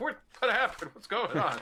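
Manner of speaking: very high, loud, startled, alarmed frog voice. Voicing a startled frog woken in the night: alarmed frog voice. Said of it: "He's like".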